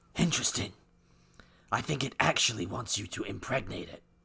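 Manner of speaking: comic-book caped vigilante voice. Redoing a comment at the other speaker's request, in Batman voice. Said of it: "Want to do a redo in your Batman voice?".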